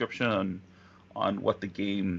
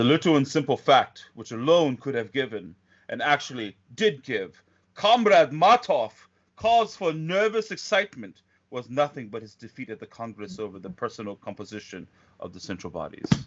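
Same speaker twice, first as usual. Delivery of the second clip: loud, stern, commanding authoritarian voice; 3 semitones higher, 5 dB louder than usual. Reading a passage aloud again, this time in an authoritarian voice. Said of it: "I'll say this in a more authoritarian voice".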